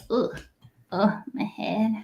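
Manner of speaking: soft, groggy, dazed, hurt goblin groan. Voicing a goblin who has just landed with a thunk: dazed goblin groaning. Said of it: "He lands with a little thunk, and he says".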